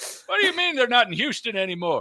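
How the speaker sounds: put-on high, loud, befuddled old-timer voice.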